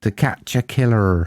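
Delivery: West Country Devon accent. Repeating the film title to show it sounds better: Devon accent. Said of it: "It's much better if you say that in Devon accent".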